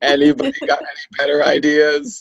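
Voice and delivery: ordinary talk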